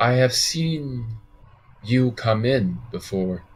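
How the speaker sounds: clear, distinct, unhurried voice with seen drawn out. Recounting a woman who speaks to you as you come in; soft, distinct voice. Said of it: "she has a very soft, distinct voice".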